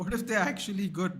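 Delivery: high, laughing, incredulous tone.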